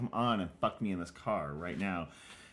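put-on pushy, forceful, aggressive tone. Retelling a film scene, quoting a woman's demand: imitating an aggressive character. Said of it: "she's kind of aggressive".

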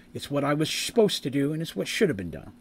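plain

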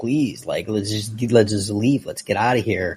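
put-on begging, pleading tone. Retelling a scene where a character begs: imitating someone begging. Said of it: "She's begging him, just like".

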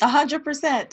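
voice cracking with glee. Answering right after reading an ad on the show, voice cracking with glee. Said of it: "It's the crack in my voice just then".

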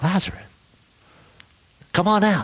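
gentle stage whisper, pitched a touch high. Retelling a Bible scene, imagining the call to Lazarus: imitating Jesus whispering. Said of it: "imagine him just whispering".

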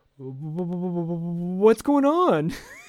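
loud stutter, dragging out the word "what's". Retelling a scene where Kavanaugh surprises Rand, imitating Rand stuttering. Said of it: "Rand starts stuttering".

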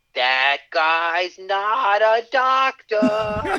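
play-acted very high, very slow, rising, drawn-out holler. Speaker quotes what another person just yelled: retelling a yell. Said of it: "he just yelled".

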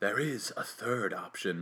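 very quiet, low, hushed, menacing, sinister voice. Reading a scene aloud, the talking cat answers the others in a sinister voice. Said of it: "in a sinister voice".

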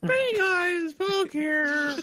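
very high, very slow, drawn-out voice. Doing an impression of another player's video intro: imitating the other speaker's voice. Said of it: "That's more like what I sound like".

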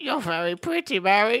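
weird, very high voice. Recalling a movie quote that creeped them out, do it in the weird Nutcracker voice. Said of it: "In that weird Nutcracker voice".

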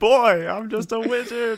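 very high, very loud outcry. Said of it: "he cries out".

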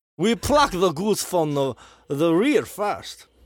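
put-on Eastern European accent. Speaker doing a character bit for the others, Gru-meets-Borat voice. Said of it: "like a mixture between Gru from Despicable Me and Borat".

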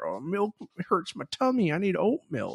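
put-on old-timer voice. Poking fun at yourself as an old fogey: put-on old fogey voice. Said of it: "an old fogey being like".

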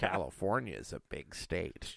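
very quiet, hushed, under the breath. Doing a Robert Durst impression about California: Robert Durst impression. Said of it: "You like my Robert Durst impression?".

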